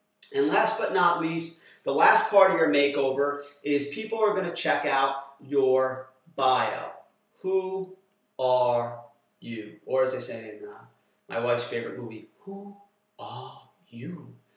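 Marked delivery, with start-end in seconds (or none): 12.4-14.4 very quiet, murmured, clumsy, poorly done creature voice. Quoting a line from his wife's favorite movie: terrible Caterpillar impression. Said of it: "I do a terrible impression".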